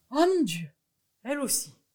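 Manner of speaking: very loud, high cry of astonishment. A man, told by his goat that it wants the mountain, cries out: stunned cry. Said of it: "cria monsieur Seguin stupéfait".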